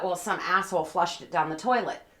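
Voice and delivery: normal talking voice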